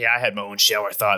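put-on voice dropped very deep. Retelling what a stand-up comedian said: imitating a deep voice. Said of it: "real deep voice".

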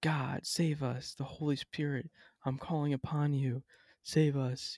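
put-on yelling. Describing a church service, acting out a lady's words, imitating someone yelling. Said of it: "So as this lady's yelling".

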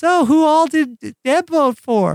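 very high, sweet voice. Retelling a moment while others waited, quoting Tina: Tina's very sweet voice. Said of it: "in her very sweet voice asked like".

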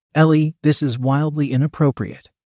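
plain reading voice

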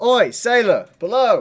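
very high, loud hailing shout. Arthur whistles up at a sailor, then shouting up to someone. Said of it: "he's also going to shout".

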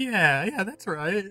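put-on, tearful crying voice. Voicing a detective patting a patient's hand: tearful. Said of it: "tearfully patting your hand".

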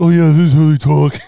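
loud, broad mocking caricature voice, belted out. Mocking how everyone's impressions of people they know sound, in a Patrick from SpongeBob voice. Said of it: "it always sounds like this".

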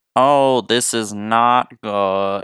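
terrible put-on voice, very slow drawn-out drawl. Doing a terrible impersonation of Jeff Goldblum after praising him: Jeff Goldblum impersonation. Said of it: "That's my Jeff Goldblum impersonation".

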